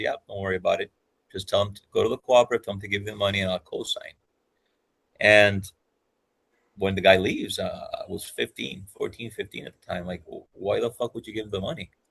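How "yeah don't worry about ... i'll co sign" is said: gentle, low-key fatherly voice. Retelling what dad said to a manager wanting a loan: imitating dad speaking quietly. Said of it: "very quietly, very, very soft-spoken guy".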